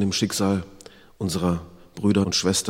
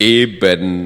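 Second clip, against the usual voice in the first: resounding laughter, loud and getting louder; 9 dB louder than usual. A narrator reads a story character's reply to another, laughing loudly. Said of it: "lachte der Unumgängliche schallend".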